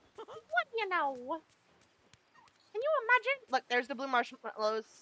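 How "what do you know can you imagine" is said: high, little cartoon mouse voice. Voicing Mickey while hunting ingredients in a game, in a Minnie Mouse voice. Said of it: "This is definitely more Minnie Mouse".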